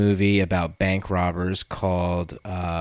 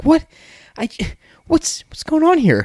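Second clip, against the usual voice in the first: put-on confused celebrity voice, higher and louder; 6 dB louder than usual. Showing how the actor acts sometimes: imitating Mark Wahlberg confused. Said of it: "the confused thing".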